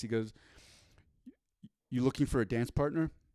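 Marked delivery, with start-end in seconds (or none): 1.9-3.1 dead straight-faced, flat, deadpan monotone. Retelling a show line he delivered straight-faced, imitating a deadpan delivery. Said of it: "he just says it just super super straight face".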